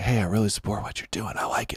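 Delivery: very quiet, secretive whisper. Retelling how conservatives approach him in the gym, imitating a whisper. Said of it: "the conservatives come up to me in the gym and whisper like".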